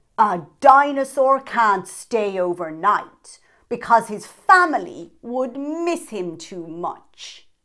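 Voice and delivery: very loud, firm, resolute voice. Reading Dinosaur's answer about staying overnight at the party: firm voice. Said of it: "said in a firm voice".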